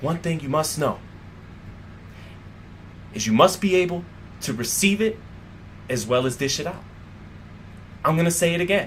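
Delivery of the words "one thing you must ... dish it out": slow, whispered, drawn-out, grand epic delivery. Discussing boxers' talk before a fight, acting out a slow, epic delivery. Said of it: "slow, epic way of speaking".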